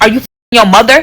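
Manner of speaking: dry, mocking, sarcastic tone. Retelling a question the speaker asked a man who admitted lying: retelling a sarcastic question. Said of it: "But I was being sarcastic".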